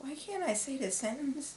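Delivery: softly spoken. Struggling to say a sentence just after waking up, quietly.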